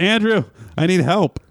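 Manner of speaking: high-pitched, called-out yell. Retelling a call for help from the bathroom: imitating Larry yelling. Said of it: "Larry yell from the bathroom".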